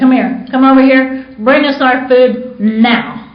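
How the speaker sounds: mock bossy, loud, demanding holler. Retelling a restaurant scene, calling the waiter over to the table: hollering at the waiter. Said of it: "I holler at the waiter".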